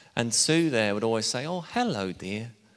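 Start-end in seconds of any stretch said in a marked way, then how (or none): 1.5-2.5 put-on pleasant, slightly posh English accent. Retelling how Sue greeted visitors at the back door, in a nice English accent. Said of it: "in a nice posh, not quite posh, nice English accent".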